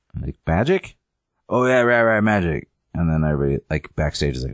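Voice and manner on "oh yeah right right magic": put-on, spaced-out, fried burnout hippie voice. Retelling a variety show's magician act: imitating a burnout hippie. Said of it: "like, burnout hippie person".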